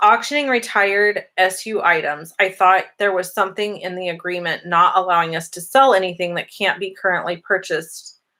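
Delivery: ordinary delivery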